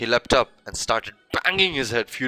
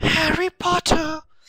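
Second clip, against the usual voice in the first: very high-pitched little elf creature voice; 3 dB louder than usual. A creature answers Harry's nervous hello, in Dobby's high-pitched voice. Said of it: "said the creature in a high-pitched voice".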